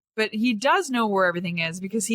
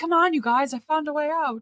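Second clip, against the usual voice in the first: mock high-pitched yelling; 7 semitones higher than usual. Describing someone in a game who found a way out, retelling a yell. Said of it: "what he's yelling through".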